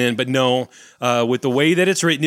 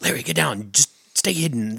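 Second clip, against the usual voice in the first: soft, hidden half-whisper, barely voiced, under the breath; 4 dB quieter than usual. Voicing a character warning a hidden companion through a door: half-whispering. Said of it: "these two people whispering back and forth".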